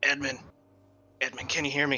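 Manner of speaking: hushed whisper under the breath. In a tabletop game, a player's character tries to reach Edmund without drawing attention, whispering. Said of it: "I'm going to try to whisper to Edmund".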